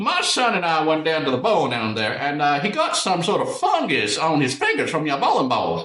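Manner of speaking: dumb, exaggerated fake Southern accent, high pitch. Speaker imitates a man who always called about random things: dumb put-on Southern accent. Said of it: "most put-on Southern accent I've ever heard".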